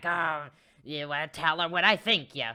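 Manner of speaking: loud, very gremlin-like creature voice. Describing how Sam speaks, imitating Sam's gremlin voice. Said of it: "in like a gremlin".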